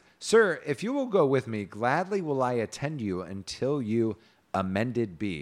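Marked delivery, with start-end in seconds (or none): none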